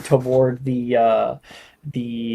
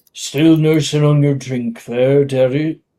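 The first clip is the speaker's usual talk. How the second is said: grizzled character voice, laid on more. In a role-play, a character greets someone still nursing a drink, in a more grizzled voice. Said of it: "it would be a more grizzled voice".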